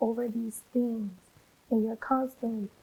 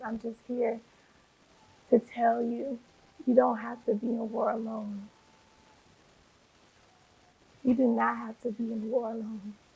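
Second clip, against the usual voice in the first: heartfelt, choked-up, emotional voice. Telling listeners they need not fight their battles alone, emotional. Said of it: "I'm getting so emotional right now".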